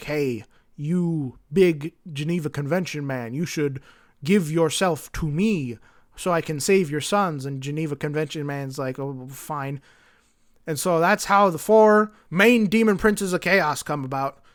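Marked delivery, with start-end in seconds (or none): 0.0-7.4 play-acted, vast, looming voice of a dark god. Retelling a story where a voice addresses the Geneva Convention man, in a big voice. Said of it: "this big voice goes like".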